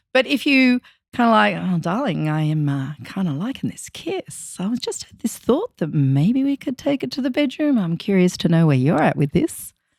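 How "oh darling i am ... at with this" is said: exaggerated seductive voice, laid on thick, lower pitch. A speaker demonstrates asking a partner to move to the bedroom, seductive tone laid on thick. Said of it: "I'm laying it on a little bit thick".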